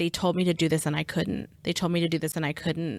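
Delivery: fast, panicked, words tumbling out. Retelling what a panicking caller said on a recording: imitating Joseph's panicked voice. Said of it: "you can hear it in his voice where he's like".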